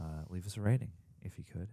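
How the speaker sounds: very hushed, soft, low, soothing radio delivery. Asking podcast listeners to leave a rating, in an NPR tone. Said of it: "It's N P R tone".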